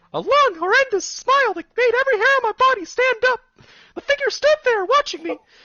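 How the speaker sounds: put-on squeaky cartoon mouse voice. Reading a scary story aloud as his best Mickey Mouse impression. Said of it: "This is my best Mickey Mouse impression".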